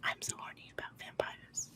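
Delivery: soft, seductive, sweet, breathy whisper, barely voiced. Retelling how Lily whispered to the other person, in Lily's sweet succubus whisper. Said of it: "Lily's sweet little succubus voice whispering".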